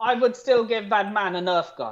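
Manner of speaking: normal talking voice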